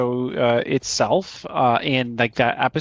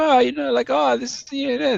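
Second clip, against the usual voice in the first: put-on whimsical old-timer voice, very high, rough and creaky; 14 semitones higher than usual. Imitating an anime character's whimsical old side: imitating a whimsical old character. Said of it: "the whimsical, like, old".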